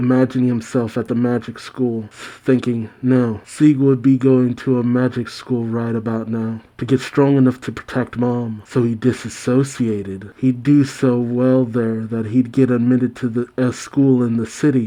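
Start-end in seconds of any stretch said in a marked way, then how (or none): none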